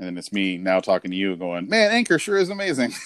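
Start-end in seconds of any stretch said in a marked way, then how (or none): 1.7-2.9 phony ad-read announcer voice, pitched up. Joking about a podcast ad plug, pretending to praise anchor: fake-sounding ad read. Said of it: "that sounds fake as shit".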